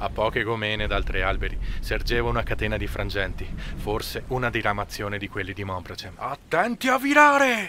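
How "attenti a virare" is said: very loud, shrill, high yell. Reading a story aloud, a man aboard the ship calls out: yelled. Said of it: "urlò egli".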